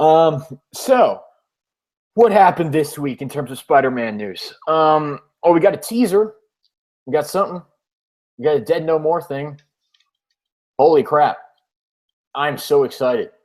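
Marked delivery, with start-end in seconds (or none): 10.8-13.3 fake-excited, sarcastic tone. Host sharing this week's Spider-Man news with a co-host, with mock enthusiasm. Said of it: "Can can you hear the enthusiasm in my voice?".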